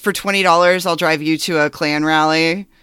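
ordinary talk, nothing marked

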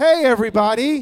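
broadcast announcer style voiceover delivery. After a quiz about whose announcer voice this is, greeting everyone in announcer voice. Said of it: "whose announcer voice is this?".

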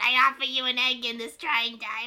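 loud, squeezed-throat comedian voice. Showing how to do the voice after giving tips, a Danny DeVito impression. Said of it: "It's me, your friend, Danny DeVito".

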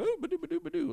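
very high, stuffy British droid voice with burble.

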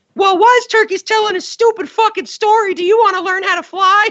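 put-on very high-pitched tiny baby bird voice. Recounting a parody scene with two bird figurines: high-pitched baby bird voice. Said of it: "they have very high-pitched voice".

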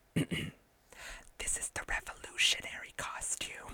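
mock whispering. Repeating a favorite movie line officially for the mic: imitating a whispered line. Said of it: "she whispers it".

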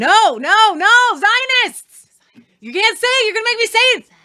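sudden, loud, very slow, swooping, drawn-out yell. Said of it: "You just yelled".

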